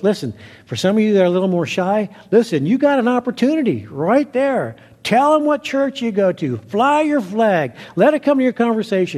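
loud, high, urging voice.

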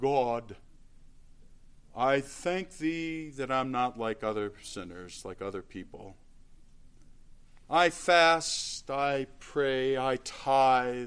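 grand, lofty, self-satisfied, dignified voice. Speaker retells the parable, voicing the Pharisee's prayer in a mock-dignified voice. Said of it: "he uses his most dignified voice".

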